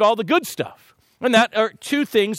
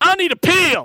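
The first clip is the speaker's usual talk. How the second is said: high put-on Texas cowboy accent; 9 semitones higher, 4 dB louder than usual. A doctor quoting a patient from texas, imitating a texas accent. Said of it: "when somebody from Texas starts talking like that".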